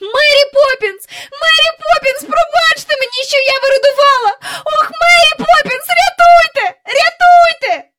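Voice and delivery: shrill, very high, echoing scream. Jane, trapped, calls out to Mary Poppins for rescue, screaming so it echoes. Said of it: "вона закричала так, що луна пішла".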